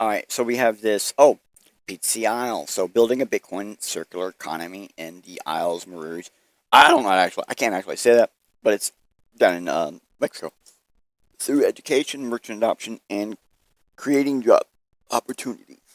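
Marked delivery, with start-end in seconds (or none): 11.4-15.8 speech interrupted by hiccuping. Speaker reads out a Bitcoin project's description: hiccuping. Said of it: "I'm having some hiccups".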